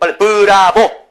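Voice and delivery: loud, slow, shouted cheer.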